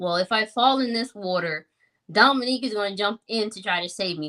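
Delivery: ordinary delivery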